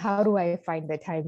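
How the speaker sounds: usual speaking voice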